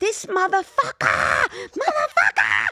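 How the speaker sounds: put-on shrill, swooping, very high, loud, upset child's yelling. Retelling banging on a door at six after candy was stolen, retelling a child's yell.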